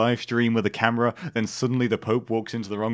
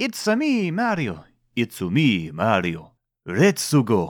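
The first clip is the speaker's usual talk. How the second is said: exaggerated Italian accent, swooping, sing-song, slow, drawn out. Joking about why Mario is Italian: Mario voice, Italian accent. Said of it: "that silly, stereotypical Italian accent".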